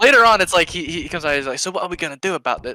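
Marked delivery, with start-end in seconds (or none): 1.6-2.8 put-on rough, streetwise, street-level British accent. Retelling a scene from a film, street-level British Tim Roth impression. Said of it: "fucking street level British".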